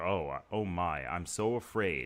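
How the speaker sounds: slow, sarcastic, mock-fearful delivery.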